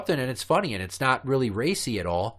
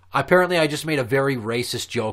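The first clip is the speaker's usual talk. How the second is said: ordinary talk, nothing marked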